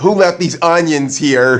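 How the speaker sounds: usual speaking voice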